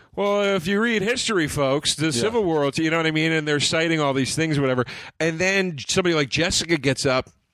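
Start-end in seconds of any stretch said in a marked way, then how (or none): 0.2-2.7 pitched-up lecturing manner. Mocking comics who do history lessons on stage: mocking a lecturing comic. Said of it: "encyclopedia bits".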